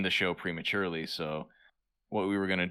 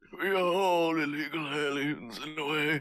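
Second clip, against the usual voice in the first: put-on old, decrepit voice, pitched higher; 8 semitones higher than usual. Repeating a quoted line as asked, in an old decrepit Patrick Stewart voice. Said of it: "Patrick Stewart's old decrepit voice".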